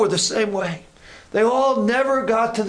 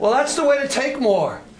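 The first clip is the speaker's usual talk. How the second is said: normal talking voice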